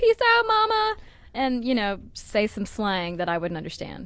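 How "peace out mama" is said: put-on very high-pitched young flapper girl voice. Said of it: "she'd be like".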